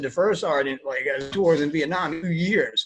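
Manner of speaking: ordinary talk, nothing marked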